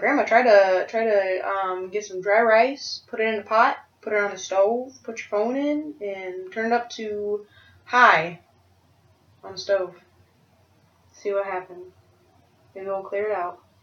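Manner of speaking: ordinary talk, nothing marked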